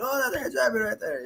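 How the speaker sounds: very high, hushed, excited and thrilled voice.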